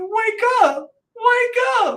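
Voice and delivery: put-on very high, loud, young-sounding pleading shout.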